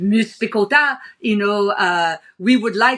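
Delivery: put-on French accent. Speaker retells what a man said to them in a meeting, French accent. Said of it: "That's a pretty good French accent you got there".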